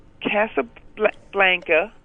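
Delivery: halting, struggling, slow sounding-out.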